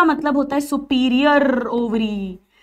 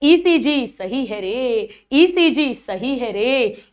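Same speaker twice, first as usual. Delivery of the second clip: put-on slow, old-style Hindi film hero drawl. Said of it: "Rajesh Khanna style में बोलो".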